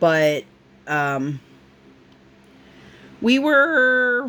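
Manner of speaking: voice cracks on were, stretched out. Chatting to listeners while her husband chokes across the room, voice crack. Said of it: "little voice crack there".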